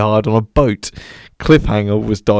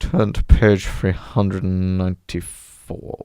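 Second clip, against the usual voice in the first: put-on stern teacher voice, quieter; 3 semitones lower, 4 dB quieter than usual. Quoting a film teacher after naming him: Professor Snape impression. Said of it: "That was a good impression".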